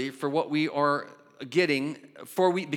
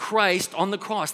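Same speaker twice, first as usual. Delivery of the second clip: ordinary talk, nothing marked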